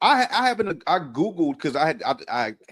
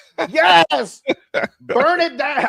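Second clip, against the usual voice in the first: put-on screaming, higher and louder; 10 semitones higher, 9 dB louder than usual. Retelling cheering at a police station fire on the news: imitating own screaming. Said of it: "screaming at the top of my lungs".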